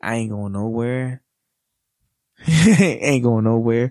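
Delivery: on the verge of tears. A father speaking to his twins, about to cry. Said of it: "I'm about to cry".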